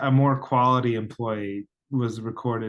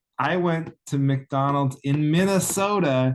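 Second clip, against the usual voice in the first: plain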